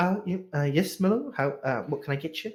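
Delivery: quiet, timid, mousy, soft, shy, hesitant voice. Storyteller voices a shy woman speaking to Milo, quiet, shy voice. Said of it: "she talks a little quiet".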